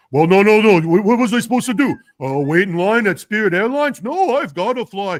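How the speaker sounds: booming, very loud politician voice. Trying out an impression in conversation, Bernie Sanders voice. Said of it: "let me see if I can do my Bernie Sanders".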